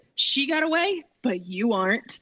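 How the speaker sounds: slow, mad, angry character voice. Voicing a character taking revenge during an attack: angry in character. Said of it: "she's mad".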